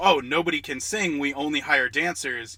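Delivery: ordinary delivery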